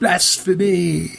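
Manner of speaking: sudden, very high outcry. Someone in the booing congregation reacts as a man falls onto Mom, cried out. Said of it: "Someone cried".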